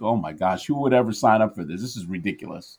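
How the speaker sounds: ordinary talk, nothing marked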